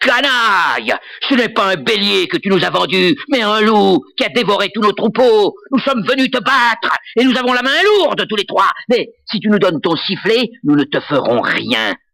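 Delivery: angry, threatening outcry. Narrator reading a story, voicing the eldest of three brothers: crying out. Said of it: "L'aîné s'écria / L'aîné s'écria".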